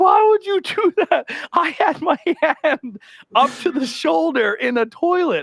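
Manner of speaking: very high, bawling crying wail. Retelling a coworker's complaint after keys were thrown: imitating someone bawling. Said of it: "he came in and he was bawling".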